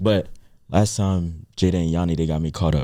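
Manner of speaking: secretive, hushed half-whisper kept low. Telling the group about last time, half-whispering. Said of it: "so I'm gonna whisper this".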